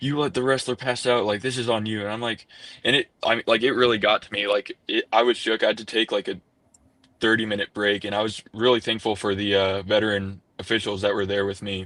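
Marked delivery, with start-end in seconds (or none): 0.0-2.0 play-acted coach voice, mad and livid. Retelling what the coach said after a wrestler passed out: imitating an angry coach. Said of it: "the coach was mad at me and he was livid".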